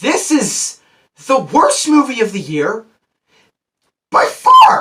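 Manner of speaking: loud, high, halting voice cracking mid-phrase. Reviewing a film they hated, giving the verdict, voice cracking. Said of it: "That was the most my voice crack has ever kicked in".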